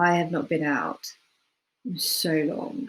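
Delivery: unhappy, upset, downcast, dejected tone. Showing the same phrase said from a different emotion: upset. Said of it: "someone upset saying".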